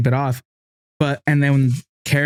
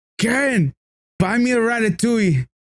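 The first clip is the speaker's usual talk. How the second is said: put-on drunk-man voice, much higher, slower; 9 semitones higher than usual. Retelling a drunk guy making a phone call, imitating a drunk man. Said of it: "He sounds drunk as fuck".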